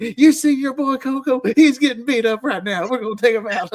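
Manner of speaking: high, loud scolding tone.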